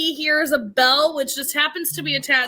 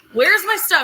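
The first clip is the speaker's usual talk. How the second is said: irritated, fed-up, pissed-off voice, pitched up; 5 semitones higher, 4 dB louder than usual. Retelling a scene, imitating pissed-off Sawyer. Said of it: "He's pissed off about this magazine".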